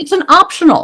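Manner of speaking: dripping, heavy sarcasm, pitched way up. Answering a co-speaker, the speaker makes a remark that is very sarcastic. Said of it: "I say that being very sarcastic".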